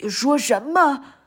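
loud, shouted cry of disbelief. Narrator reading an old frog's reply to a muskrat, shouting. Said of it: "青蛙爷爷喊起来".

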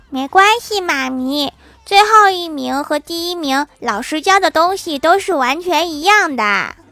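put-on high, bright, reassuring child voice.

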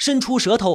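ordinary delivery, nothing marked

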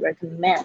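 recommend with stress on last syllable -mend. English lesson on pronouncing recommend: stress on last syllable mend. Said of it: "recommend 的重音呢是在后面这个".

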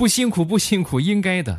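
high, eager, delighted gushing.

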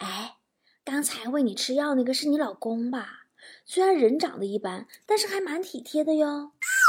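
hushed and soft.

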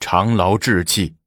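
plain reading voice

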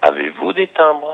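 question-like rising pitch at end on "timbres". Teaching French question intonation, rising pitch on 'timbres'. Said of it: "on élève toujours le son aigu, vers le son aigu, à la fin de la phrase interrogative".

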